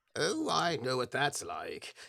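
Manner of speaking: put-on old man character voice. Voicing an old man sitting in a waiting room: old man character voice. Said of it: "There's an old man next to you who's like".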